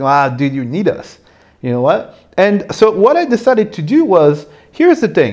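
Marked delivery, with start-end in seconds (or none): none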